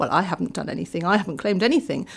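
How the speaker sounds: mock smugly innocent, self-satisfied tone. Speaker acts out people with private money, imitating someone smug. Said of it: "They go smugly".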